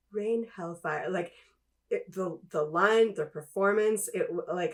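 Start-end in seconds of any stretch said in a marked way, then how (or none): 0.1-1.0 relaxed put-on commander voice. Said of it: "his very relaxed".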